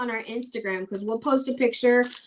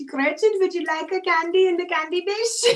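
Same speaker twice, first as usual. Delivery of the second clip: put-on old lady voice, higher; 7 semitones higher than usual. Acting out an old lady offering candy: imitating Grandma Babe. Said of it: "she says it like that 'cause that's literally how her grandma talked".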